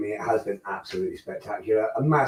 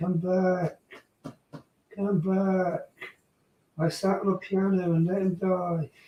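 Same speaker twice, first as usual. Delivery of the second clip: desperate, pleading wail; 9 semitones higher, 4 dB quieter than usual. After calling number 8 back in a race, repeating it as a mock-desperate Titanic woman call. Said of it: "I sounded like the woman from Titanic then".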